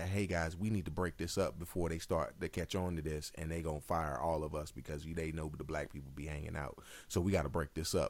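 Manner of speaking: hushed stage half-whisper. Retelling a joke line said to the group: retelling a half-whisper. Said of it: "And I'll whisper".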